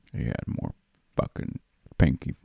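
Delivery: put-on manly vocal fry. Repeating a man's line from a heavy movie scene, in a manly vocal fry impression. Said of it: "He had the big time manly vocal fry going".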